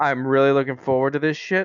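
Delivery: fast, eager, excited gush. Talking with others about what comes next, sounding excited. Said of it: "You really sound it".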